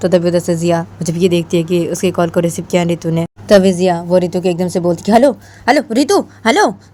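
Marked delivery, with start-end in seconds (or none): 5.2-6.7 high, shrill shouting, called out over and over. Narrator reads a character calling another on the phone, shouting. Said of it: "क्या चिल्ला क्यों रही हो".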